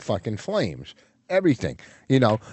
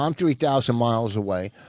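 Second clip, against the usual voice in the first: ordinary talk, nothing marked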